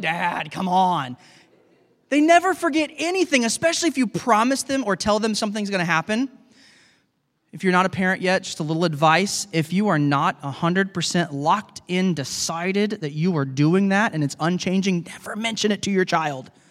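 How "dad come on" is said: slow, exasperated, sighing delivery. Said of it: "always exasperated".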